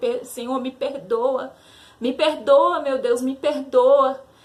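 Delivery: put-on crying, slow, tearful, pleading voice. Retelling praying to god after being beaten: retelling a tearful plea. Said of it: "E eu comecei a chorar".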